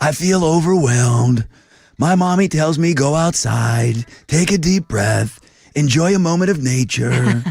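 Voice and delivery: put-on puppet-like character voice. Asked by the other speaker to try it, doing a Snuffleupagus voice. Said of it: "that's how Snuffleupagus talks".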